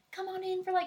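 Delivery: high southern hostess voice. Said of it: "Southern people are like".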